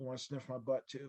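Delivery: very hushed, bone-dry deadpan delivery. Parent retelling a daughter's reply to the ex-wife, retelling a deadpan line. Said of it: "looked at her deadpan and said".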